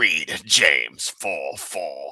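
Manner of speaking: very slow, low, deliberate, every word dragged. Joking about getting to use the voice again: Palpatine voice. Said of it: "me to do my Palpatine voice".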